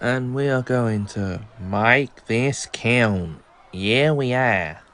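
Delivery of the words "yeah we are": put-on Australian accent. Answering briefly, slipping into an aussie accent. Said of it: "I just adopted my Aussie accent there".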